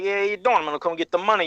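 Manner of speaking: put-on mob tough-guy voice. Describing someone who reminded them of a mob collector: imitating a mob debt collector. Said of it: "the loan shark or the people that come collect".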